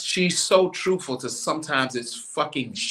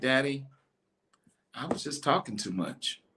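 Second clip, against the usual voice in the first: mock sincere, frank, honest, straight-out delivery; 8 dB quieter than usual. Retelling how his daughter actually answered: imitating daughter, honest confession. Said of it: "how she actually said it".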